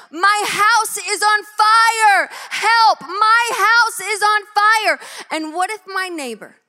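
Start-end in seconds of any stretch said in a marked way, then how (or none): 0.1-4.9 loud, high, very slow, drawn-out yell. Describing running into the street as his house burns, retelling a yell for help. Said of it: "I'm yelling".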